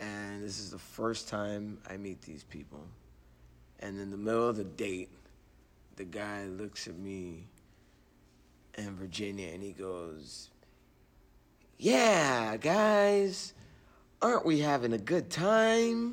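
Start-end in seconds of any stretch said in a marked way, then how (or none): 11.8-16.1 very high, slow game show host voice, "guys" stretched. Speaker imitates a man talking in the middle of a date: game show host voice. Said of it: "Why does he sound like a game show host?".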